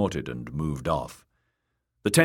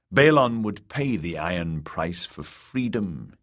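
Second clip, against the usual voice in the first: ordinary delivery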